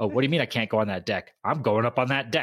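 rebellious, defiant voice. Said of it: "rebellious Kaladin".

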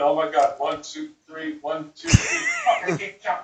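mock flustered, nervous, swooping pitch. Retelling leading a woman in a dance, imitating her nervous counting. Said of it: "she gets all nervous and starts going".

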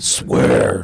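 deep, low voice pushed out forcefully.

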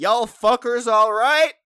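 very loud, high, bellowed, hollered yell. Retelling a stranger from a truck who called out: imitating someone yelling. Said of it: "just yells back at us".

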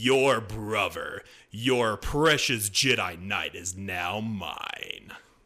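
dark, sinister, mocking, taunting villain voice. Retelling a scene where Palpatine taunts Leia: sinister taunting Palpatine voice. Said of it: "the more sinister voice of Palpatine is all like, very taunting".

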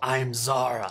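growled creature voice. A character answers the party's introductions with her own name: Zara growling. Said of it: "growls back".

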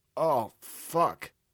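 disgusted groan. Narrating, waking with blood at the back of the throat: moaning in disgust. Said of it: "I moaned in disgust".

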